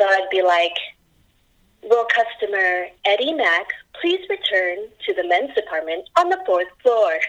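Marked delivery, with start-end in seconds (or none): 1.8-7.2 calm, smooth, soothing announcer voice. Retelling a past store paging job, paging a customer: soothing store paging voice. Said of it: "we had to be soothing".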